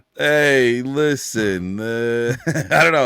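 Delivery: loud, very slow, drawn-out New York accent. Speaker brings back a character the other speaker asked to hear again, New York Loser voice. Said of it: "It's the guy from New York who thinks losing is cool".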